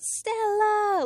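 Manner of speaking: high, drawn-out, movie-style scream.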